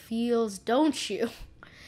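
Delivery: plain reading voice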